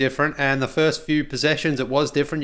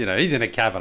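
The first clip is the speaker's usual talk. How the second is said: ordinary talk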